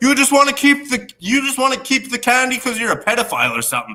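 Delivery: shrill, high-pitched, acted yelling. Speaker retells a man yelling at them in a Halloween fight, imitating someone yelling. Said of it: "he was like yelling at me".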